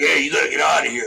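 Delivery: put-on boisterous man's voice, gruff, rough and creaky. Recalling a loud man ordering someone off the bus, imitating Raphael's booming voice. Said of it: "this guy Raphael had a real boisterous voice".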